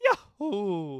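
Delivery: drawn-out, stretched cartoon character voice. Speaker asks "Mario voice?" and then speaks in Mario voice. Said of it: "Mario voice?".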